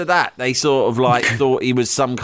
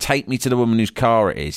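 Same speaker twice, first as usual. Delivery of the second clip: usual speaking voice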